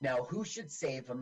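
ordinary delivery

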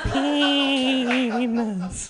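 spooky, high, stretched-out poltergeist voice.

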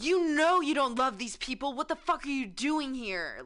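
loud, forceful yell. Describing voices heard while half asleep, imitating someone yelling. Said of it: "just yelling at me".

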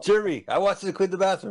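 high-pitched, bossy, mocking put-on voice.

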